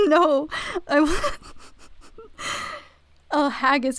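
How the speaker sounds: high, loud, laughing and giggling.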